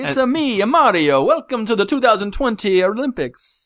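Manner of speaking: mock Japanese voice, high. Retelling Japan's Prime Minister appearing as Mario at the Olympics: Mario voice. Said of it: "with the super Japanese voice".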